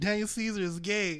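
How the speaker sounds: ordinary delivery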